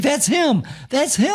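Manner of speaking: very high, bouncing cheerleader-style excited cry. Retelling what a woman jumping up and down beside him said, imitating someone excited. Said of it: "she's all excited".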